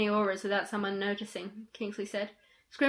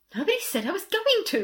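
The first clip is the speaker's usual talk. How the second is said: defensive, high, swooping upward protesting tone; 7 semitones higher, 3 dB louder than usual. Told by a friend not to take someone along, he answers, defensive. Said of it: "Ron said defensively".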